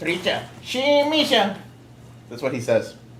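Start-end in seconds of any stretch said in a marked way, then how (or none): 0.0-1.6 slow, high-pitched gibberish voice. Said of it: "I go".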